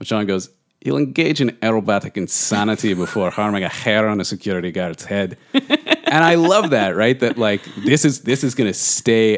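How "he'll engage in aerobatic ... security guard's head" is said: put-on Scottish brogue. Host quotes Sean describing a character, in a put-on Scottish brogue. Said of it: "that was a great Scottish brogue".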